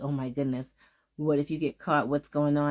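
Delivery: acted, mock-frantic, put-on excitement. Retelling what a man said to her, imitating frantic excitement. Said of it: "in a more of a kind of excited and a frantic kind of way".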